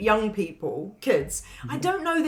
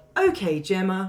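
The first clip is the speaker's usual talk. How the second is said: put-on deadpan, flat doll voice; 2 semitones lower than usual. Describing the doll in a film, imitating her reply: piercing deadpan Megan voice. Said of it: "that piercing deadpan".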